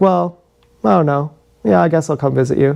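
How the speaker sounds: put-on apathetic, indifferent tone. Retelling a boyfriend's reply to a visit request: imitating an apathetic tone. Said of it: "he's just so apathetic".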